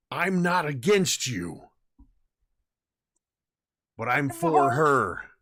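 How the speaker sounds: acted shout, very loud and high-pitched. Shouting back in character at an ally: shouting back in character. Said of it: "Klaus just shouting back".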